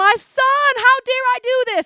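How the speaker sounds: very high, slow, drawn-out weeping. Picturing a story's king lamenting over his son, acting out Saul weeping. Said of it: "he was like weeping like".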